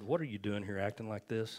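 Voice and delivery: acted soft, gentle tone. Retelling the voice that spoke to the man lying at the altar, acted gently. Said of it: "the Holy Spirit just real gently said".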